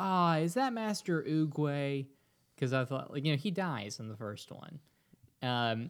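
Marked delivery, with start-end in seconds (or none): 0.0-2.1 put-on startled yell, slow and drawn-out. Recounting their own reaction to a cloaked figure on screen: retelling yelling out. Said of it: "I like yelled out".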